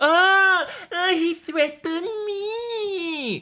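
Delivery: very high, slow crying voice, "me" dragged out. Acting out a reply in an impression: imitating Tony Khan. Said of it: "that's my impression of T K".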